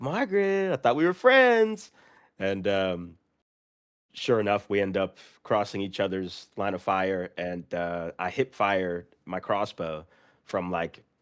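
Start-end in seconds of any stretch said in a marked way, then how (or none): 0.0-1.9 mock shrill, very high, loud called-out shout. Retelling calling out to another player in a game: imitating own shout. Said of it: "I went to triple shout".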